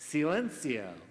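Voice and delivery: angry, scolding shout.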